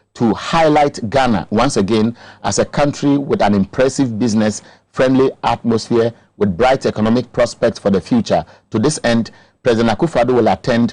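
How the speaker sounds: ordinary delivery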